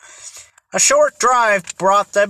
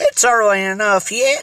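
ordinary delivery, nothing marked

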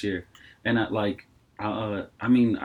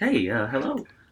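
polite, apologetic voice; 3 semitones higher than usual. Retelling answering a call from an unknown number, in a put-on sorry-to-bother-you voice. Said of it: "my sorry to bother you voice".

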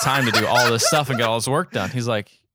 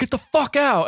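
high-pitched screaming outburst; 13 semitones higher than usual. Retelling a man throwing a woman out, imitating a man screaming. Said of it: "starts screaming at her like".

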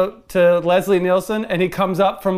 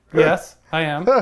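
mock-deadpan delivery, lower pitched; 3 semitones lower than usual. Recounting a favorite movie scene, quoting the doctor's reply as a deadpan Leslie Nielsen impression. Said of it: "just so deadpan dry".

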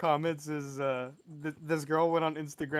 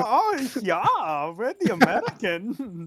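put-on loud, swooping German accent; 6 semitones higher, 7 dB louder than usual.

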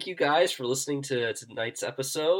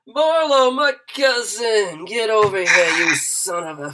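tipsy, booming, very loud, very slow, drawn-out; 7 semitones higher, 8 dB louder than usual. Narrator voices Basil, just back, greeting his cousin Marlo, Basil a bit drunk. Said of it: "He kind of has just gotten back, and he's a bit drunk, and he sees [name] and says".

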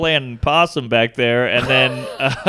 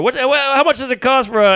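mock, very high-pitched yelling; 9 semitones higher than usual. Retelling asking the rental car desk over a line, imitating his own yelling. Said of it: "yelling over".

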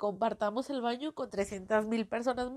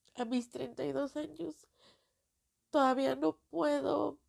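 crying, tearful voice; 3 semitones higher than usual. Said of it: "Si estoy llorando".

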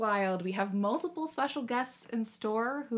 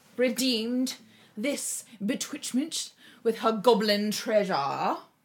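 put-on old-timey, old-fashioned manner of speaking; 3 dB louder than usual. Announcing who redeemed it, after remembering to talk old timey. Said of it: "I'm supposed to be talking old timey".

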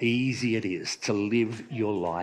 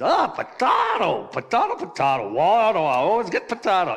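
bad put-on Irish accent, loud and swooping; 8 semitones higher, 6 dB louder than usual. Telling a joke, the speaker voices the Irishman in a bad Irish accent. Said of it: "Don't do a good English Irish accent".

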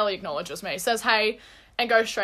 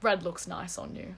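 put-on smirking tone, much quieter; 7 dB quieter than usual. Retelling what a man said to her before walking out, imitating a smirking remark. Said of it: "with a little smirk on his face and goes".

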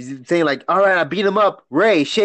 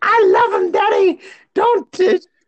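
put-on woman's voice, higher pitched. Acting out a daughter defending her boyfriend to her father: impression of a lady. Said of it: "impression of a lady right there".

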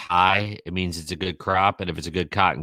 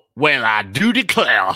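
exaggerated Southern drawl, higher pitch; 5 semitones higher, 5 dB louder than usual. Giving a hint in a phrase-guessing game, in a Foghorn Leghorn voice. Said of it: "Think of Foghorn Leghornish".

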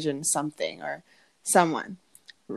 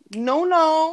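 high, loud hype ad lib. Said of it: "And she's like".

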